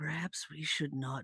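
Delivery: whispered aside. In a role-play, whispering to two companions still trying to be stealthy. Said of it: "I whisper".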